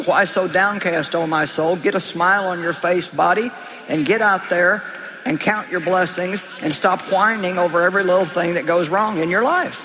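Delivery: low-pitched sassy voice. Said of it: "get a little bit sassy with our souls".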